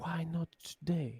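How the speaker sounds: slow, drawn-out half-whisper, slightly high. Narrating a scene where a woman half-whispers slowly as the players pass. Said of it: "she will whisper slowly".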